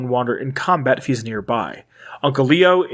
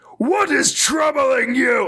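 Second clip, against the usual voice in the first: very high-pitched, pained monster yell; 11 semitones higher than usual. Discussing a voice actor's super mutant delivery, doing a Wes Johnson super mutant yell. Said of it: "Wes Johnson, like, yells. Like, he's like".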